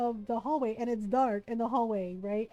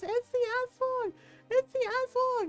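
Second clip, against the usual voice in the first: put-on scream, much higher pitch; 13 semitones higher than usual. Retelling the brother freaking out at mom's silhouette, imitating brother's scream. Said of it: "He screams".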